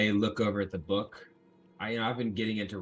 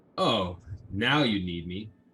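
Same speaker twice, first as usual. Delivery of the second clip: sassy, snippy tone with attitude; 4 dB louder than usual. Answering, in character, a call to come read a word: snippy tone. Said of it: "watch that tone".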